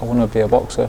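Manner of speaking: ordinary talk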